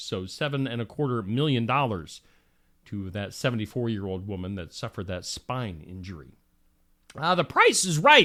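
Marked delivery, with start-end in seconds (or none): 7.3-8.3 voice cracking, louder and higher. Reading out entertainment news items on the show, voice cracking. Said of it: "I don't know why my voice cracked".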